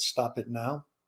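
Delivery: put-on quiet tone. Retelling a correction of a drill sergeant: retelling a quiet warning. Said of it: "I very quietly said".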